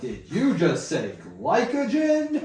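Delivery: put-on, over-the-top, loud, swooping, very slow and drawn-out. Retelling a podcast clip where the other guy mocks a science talk: imitating a loud, exaggerated guy. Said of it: "a really loud, ex-, exaggerated guy".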